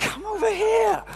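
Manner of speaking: exasperated, loud yell, pitched way up. Retelling getting frustrated in a queue and shouting at her, retelling a frustrated shout. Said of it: "so I shout".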